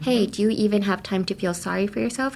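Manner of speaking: ordinary talk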